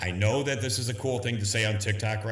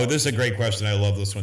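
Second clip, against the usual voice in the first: fast, sarcastic, mock-gushing fake enthusiasm; 5 dB louder than usual. Answering a question from the comments, sarcastic. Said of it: "I'm being sarcastic".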